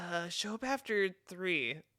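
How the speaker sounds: put-on exasperation, fed-up and slightly frantic. Retelling what the woman said on the phone: imitating an exasperated woman. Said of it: "kinda exasperated and was like".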